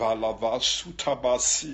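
slow, unintelligible babbling in no real language.

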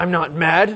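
mad-sounding, angry, upset insistence. Showing tone of voice: denying being mad while sounding mad. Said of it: "you sound mad. The tone of your voice tells me that you are upset".

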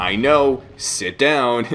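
mock exasperated, fed-up tone. Retelling a line the mysterious voice said to Vincent: imitating a fed-up voice. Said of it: "so fed up with Vincent".

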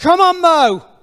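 very loud cheering shout. Retelling one guy cheering a runner's last lap: imitating someone shouting. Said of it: "that one guy who was shouting".

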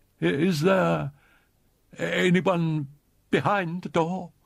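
high, slow, tremulous and quavering voice. A ballet dancer, trying to seem brave, asks through a closed door: quavering voice. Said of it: "in a quavering voice asked".

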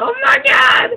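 very high shouted mock shocked exclamation.

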